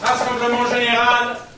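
high-pitched shouting. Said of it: "Inutile de gueuler comme ça".

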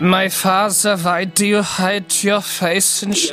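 put-on German-accented voice. Actor recording a line after being asked to use normal voice, put-on German accent. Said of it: "You did it again".

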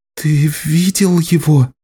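shaky, trembling, wavering, quavering voice. A wounded woman, laid on her back, asks her helper in a trembling voice. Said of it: "Дрожащим голосом спросила она".

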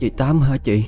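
weak, barely audible voice. Reading a story, the narrator voices a woman with a broken leg asking through the door, faint and feeble. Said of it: "hỏi với giọng thều thào".

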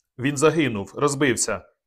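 ordinary delivery

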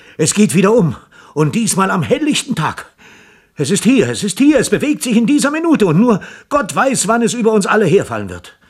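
high, gasping blurt, words forced out between pants. Reading a story, a panting man bursts in on the scientists: blurted out, gasping. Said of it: "stieß er hervor".

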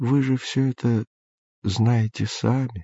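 kind, gentle tone. An old man answers a young man's question; say it gently. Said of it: "ласково сказал старик".

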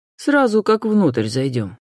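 usual speaking voice

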